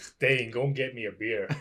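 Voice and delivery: clumsy, put-on attempt at a Scottish accent. Asked to try an accent, a friend says a suggested sentence: Scottish accent impression. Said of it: "can you do a Canadian impression for me?".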